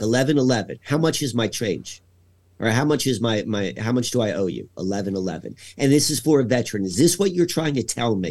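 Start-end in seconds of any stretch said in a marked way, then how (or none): none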